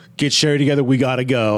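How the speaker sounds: usual speaking voice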